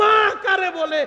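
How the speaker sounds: high, loud preaching shout.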